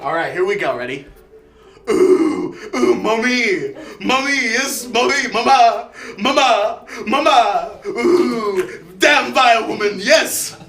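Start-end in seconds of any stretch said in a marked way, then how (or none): 1.9-10.5 slow, drawn-out, put-on British cartoon voice. Doing Tarantino's Stewie impression, Stewie voice. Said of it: "Tarantino's Stewie impression".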